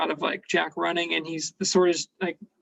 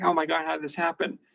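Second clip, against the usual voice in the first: put-on terrified character voice; 3 dB quieter than usual. Retelling a scene where the hero is cornered, imitating Jack terrified. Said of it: "Jack's face is like he's terrified and he's like".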